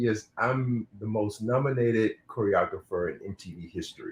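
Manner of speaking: ordinary delivery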